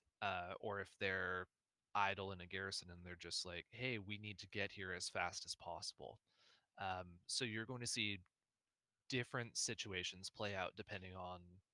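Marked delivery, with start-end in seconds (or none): none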